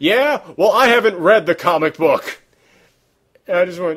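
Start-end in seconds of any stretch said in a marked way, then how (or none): 0.0-2.4 loud, defensive, shouted outburst. Quoting a woman at the end of a long argument, retelling a shout. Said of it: "she just shouted out".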